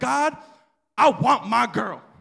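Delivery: insistent, demanding voice. Telling how the speaker's father wanted a daughter, imitating father demanding a girl. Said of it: "He demanded a girl".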